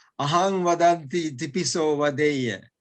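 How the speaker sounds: usual speaking voice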